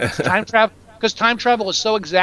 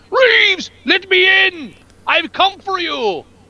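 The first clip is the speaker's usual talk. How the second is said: put-on very high, very slow, drawn-out shriek; 11 semitones higher, 4 dB louder than usual. Recapping a movie, quoting a character at the front gate: imitating a character screaming. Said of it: "by going to the front gate and screaming".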